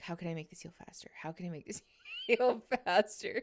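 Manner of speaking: mock muttering under the breath. Retelling what the surgeon said at a checkup: imitating muttering under breath. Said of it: "under his breath".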